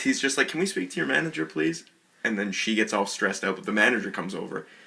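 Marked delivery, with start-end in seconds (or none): 0.5-1.8 very nice, extra-courteous, pitched-up polite tone. Retelling a restaurant complaint, imitating Josh asking very nicely. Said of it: "very nice".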